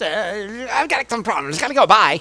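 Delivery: put-on boy inventor voice. Reading out an inventor's message: Apple Kid voice. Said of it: "it's my Apple Kid voice".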